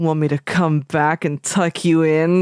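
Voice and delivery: mock creepy voice, acted. Quoting a character's unsettling offer: imitating a creepy line. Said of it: "really creepy".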